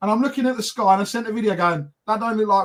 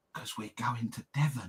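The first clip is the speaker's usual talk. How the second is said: very low, quiet, hushed half-whisper; 10 semitones lower, 14 dB quieter than usual. Retelling their mum's reply when asked about a weekend away, imitating mum half-whispering. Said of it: "Mum, why are you whispering?".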